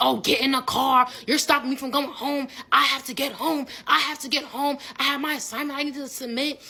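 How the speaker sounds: imitated screaming voice. Retelling a man yelling at the speaker in the street, retelling someone screaming. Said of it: "He's screaming at me in the middle of the street".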